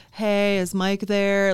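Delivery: lifeless, flat, slow, bored robotic phone monotone. Showing a cold call made after many dials: bored robotic phone voice. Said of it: "if you sound depressed and bored".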